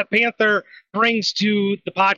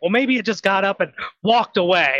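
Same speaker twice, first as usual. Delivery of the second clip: usual speaking voice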